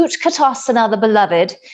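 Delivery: put-on British accent. Leading a class, recalling an old teacher's line, in a British accent. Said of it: "said with a British accent".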